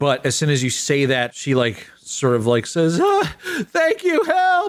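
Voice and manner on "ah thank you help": frightened woman's cry, very high, slow, terrified. Voicing a woman who hides her babies behind a protector: terrified woman. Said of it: "She looks terrified at first".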